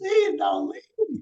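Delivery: mock crying, very high, desperate tearful pleading tone. Retelling a viral video of a wife on her knees: imitating crying and begging. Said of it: "she on her knees crying and begging".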